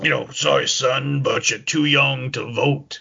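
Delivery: gruff, slow, unhurried boss voice. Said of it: "just talk in a gruff tone".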